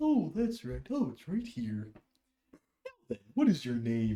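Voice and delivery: put-on creature character voice. Voicing a furbolg who greets the player: voicing a furbolg character. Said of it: "He's like".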